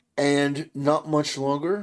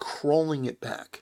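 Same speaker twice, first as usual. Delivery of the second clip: plain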